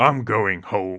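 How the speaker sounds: growling monster voice. Reading a story aloud, as rain starts and the creature leaves: Gruffle's growl. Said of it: "he growled".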